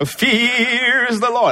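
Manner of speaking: high put-on Texas accent, "fears" drawn out. Reading a bible verse aloud, repeating a phrase in a texas accent. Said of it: "You must have that Texas voice".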